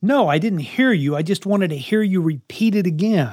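put-on snarky, sarcastic child's voice talking back. Acting out a child's reply to repeated reminders: imitating a sarcastic child. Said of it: "A little sarcasm there".

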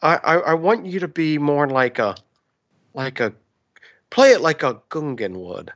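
calm voice, stammering and stumbling over words. Playing George Lucas directing actors from the chair: George Lucas impression sounding like Bob Ross. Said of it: "my George Lucas is more and more starting to sound like, um, Bob Ross".

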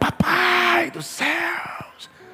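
male shouting voice. Retelling how a man praying nearby kept calling out: imitating a man shouting. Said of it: "E o cara gritando".

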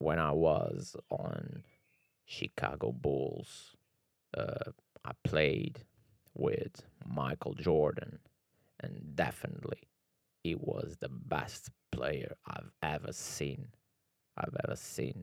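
deep, very slow, breathy, drawn-out voice. Trying the basketball player impression one last time: deep Scottie Pippen voice. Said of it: "Vou tentar uma última vez".

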